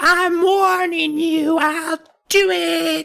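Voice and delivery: shrill, scratchy mouse voice, very high, drawn out. Retelling a story, the speaker voices Kermit warning another character: Kermit's shrill scratchy voice. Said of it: "Kermit in his shrill, scratchy mouse voice".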